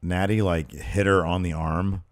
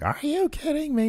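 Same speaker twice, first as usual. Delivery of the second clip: very high, squealy outburst. Recapping a wrestling match, quoting Carmella in her high squealy voice. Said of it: "in her high voice, squealy voice".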